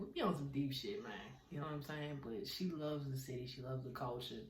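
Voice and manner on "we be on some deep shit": ordinary talk, nothing marked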